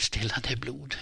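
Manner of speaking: in a whisper. Narrator reading a man's line as he presses a bandage to an injured woman, whispered. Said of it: "viskade han".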